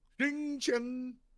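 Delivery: failed fake French accent, pitched very high. Asked if someone is French, the speaker answers in a bad attempt at French accent. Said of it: "I tried to make that sound French".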